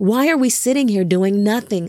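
usual speaking voice

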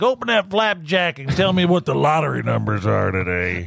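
put-on old prospector voice. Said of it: "the old miner's voice".

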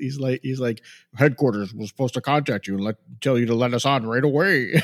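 stiff, weird-sounding put-on voice. Describing a man's line in a movie, the speaker imitates a stiff, weird voice. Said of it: "it's such a weird voice to put on and he's all like stiff".

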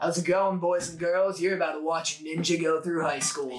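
level, monotone robot host voice. Retelling how Tom, the Toonami robot, introduced shows: imitating Tom from Toonami. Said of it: "I've been watching Steve Blum as Tom, that robot".

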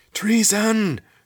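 very high, shrill, very loud shout. A narrator reads a lizard tied to a post crying treason: shouted. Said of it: "shouted the lizard".

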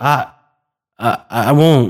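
stammering, stuttering. Narrator reads a man's reply when asked to promise not to tell; stammering. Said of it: "he stammered".

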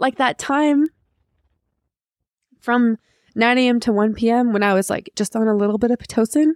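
crying through words, high, tearful, voice cracking. Reading her notes from five years ago about giving birth, crying, voice breaking. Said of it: "Why am I crying?".

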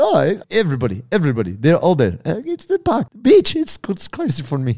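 put-on Russian accent. Telling a story, the speaker quotes a cabbie, in a put-on russian accent. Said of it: "And he sounded Russian".

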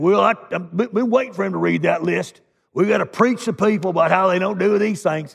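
put-on Southern US accent. Voicing what some in the audience might think, in a Southern accent. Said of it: "I have a Southern accent when I do that".

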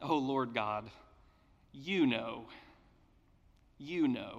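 slow, half-sarcastic, unwilling tone. Acting out the prophet's answer to God: Ezekiel muttering sarcastically. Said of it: "muttering an almost sarcastic response".

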